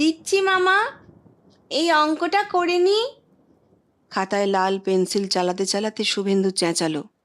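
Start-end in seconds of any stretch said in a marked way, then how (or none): 0.0-3.0 high thin voice, higher pitch. Reading a story where a girl calls back to her uncle: thin voice. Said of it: "চিকন গলায় জবাব ভেসে এলো".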